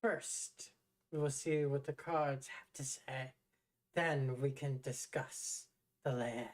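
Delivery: put-on slow, dry, crackling old crone voice. Storyteller voices the crone fortune teller answering a player, in a crackling crone voice. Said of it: "crone inside? speaks, her voice crackles like dry weeds. / hunched, fortune teller. pale figure peers into its depths. As the Are we gonna go crone inside? speaks, her voice crackles like dry weeds. A".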